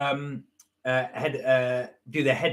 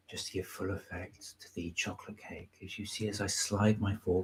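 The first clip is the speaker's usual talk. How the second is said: mock ASMR whisper, lower and quieter; 7 semitones lower, 14 dB quieter than usual. Pretending to do a quiet mukbang over chocolate cake: mock ASMR whisper. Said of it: "I'd be very, very quiet like this".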